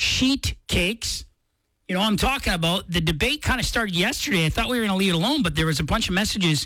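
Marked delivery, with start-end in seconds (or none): 0.0-1.2 spoken nice and slow. Radio host introducing a debate from listener messages, saying it nice and slow. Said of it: "I have to say this nice and slow".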